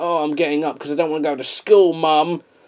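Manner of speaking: acted-out, grudging, reluctant groaning. Imitating a film character getting up: imitating a reluctant groan. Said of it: "that groan when he got up".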